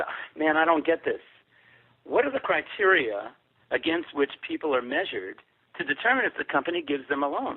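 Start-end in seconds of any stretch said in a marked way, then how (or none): none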